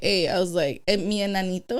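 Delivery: ordinary talk, nothing marked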